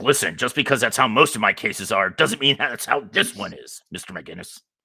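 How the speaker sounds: mock angry judge voice. Retelling how a judge scolded him, imitating an angry judge. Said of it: "the judge got really mad, and he's like".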